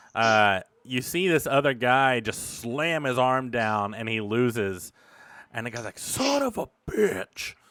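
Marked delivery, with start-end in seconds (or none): 6.0-7.5 very high, drawn-out, furious tone. Voicing an arm wrestler who lost and storms off: angry loser outburst. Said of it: "storms off to the next bar".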